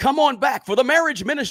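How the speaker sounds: radio commercial announcer voice. Recalling years of doing voices for free, the speaker demos a commercial voice.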